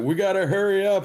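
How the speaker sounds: very high, shrill, high-pitched shout. Urging the others to hurry as sirens sound nearby: shouting. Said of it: "I shout".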